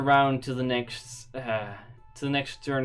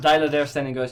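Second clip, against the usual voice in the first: ordinary delivery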